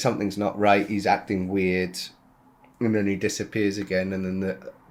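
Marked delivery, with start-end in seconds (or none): none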